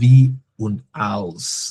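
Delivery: "wie und als" very slow, careful, spelled out.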